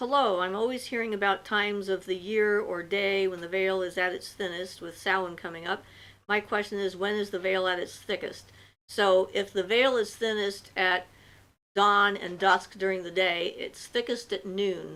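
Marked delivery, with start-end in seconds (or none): none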